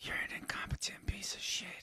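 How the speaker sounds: put-on whisper. Retelling a scene from a dream, imitating a whisper. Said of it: "whispering to him".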